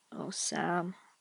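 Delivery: softly murmuring. Reaching out to a grieving man slumped on the ground, murmured. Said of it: "he murmurs".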